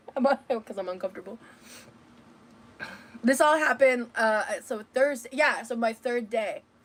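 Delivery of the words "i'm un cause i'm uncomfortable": words breaking up with laughs, talking through laughter. Explaining own uncomfortable laughter mid-story: laughing while talking. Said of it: "Why am I laughing?".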